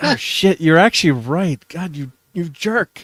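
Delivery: playfully fake-angry. Retelling Klobby convincing the speaker an ending was bad: jokey mock anger. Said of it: "I got mad at him, like, in a jokey way".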